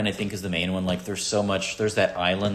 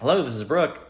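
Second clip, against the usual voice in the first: play-acted polite, friendly phone voice, pitched up; 6 semitones higher than usual. Retelling how calls used to be answered: imitating a nice phone greeting. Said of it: "I used to answer it nicely".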